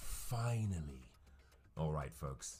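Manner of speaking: low, slow, dramatic premiere announcer voice.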